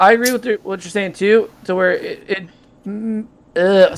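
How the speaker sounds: stuttering, stammering, tripping over words. In a group discussion about relationships, agreeing with another speaker, stuttering. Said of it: "sorry, I'm stuttering".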